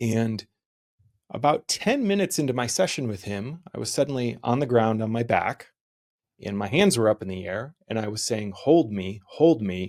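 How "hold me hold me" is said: play-acted slow, guttural sobbing, pleading tone. Retelling lying on the ground with hands up: retelling own crying plea. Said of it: "I was just crying, sobbing in a guttural way".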